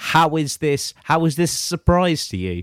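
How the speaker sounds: mock shouting, high-pitched and drawn out. Retelling watching a dating show in a girlfriend's living room; retelling shouting at the TV. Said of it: "literally shouting at the TV".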